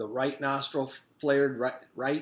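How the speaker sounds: plain reading voice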